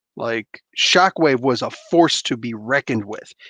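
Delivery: ordinary delivery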